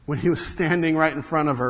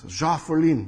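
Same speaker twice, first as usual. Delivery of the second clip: lower-pitched, failed attempt at German accent. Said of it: "I can't do the accent".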